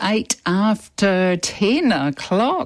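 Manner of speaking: high, very slow, drawn-out and stretched. Radio host announcing the time at the top of the hour, very slow, stretched out. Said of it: "saying the time sort of very slowly and stretched out".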